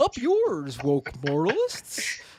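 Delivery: slow, drawn-out, swooping felt frog-puppet voice. Trying the quote again after a weak first try: Jordan Peterson as Kermit the Frog. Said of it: "Let me try to, Kermit the Frog here".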